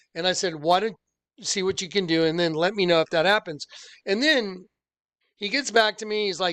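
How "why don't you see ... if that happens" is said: ordinary talk, nothing marked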